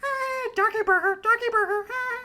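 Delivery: voice pushed way up high. Recalling a favorite cartoon moment, imitating a side character: high-pitched Skeeter voice. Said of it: "that high-pitched, um, Skeeter voice".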